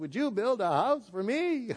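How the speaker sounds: motherly character voice.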